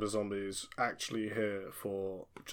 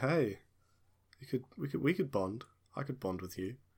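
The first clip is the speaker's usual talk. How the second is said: playful, seductive, flirty, coaxing voice; 3 semitones higher than usual. Swaying toward a zombie in character while dancing: flirtatious come-on. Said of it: "come just a little bit closer and say".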